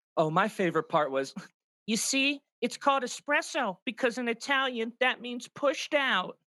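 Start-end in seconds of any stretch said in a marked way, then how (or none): 1.8-6.2 high-pitched mocking voiceover impression. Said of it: "I'm mocking him".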